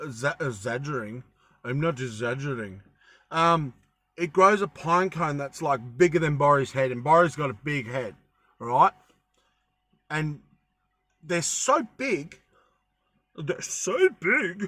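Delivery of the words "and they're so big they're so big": slow voice, breaking and cracking on the words. A video host, mid-explanation, speaks with voice breaking. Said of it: "It's like my voice is breaking".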